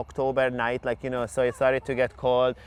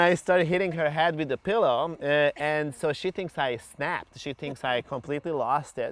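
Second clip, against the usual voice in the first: ordinary talk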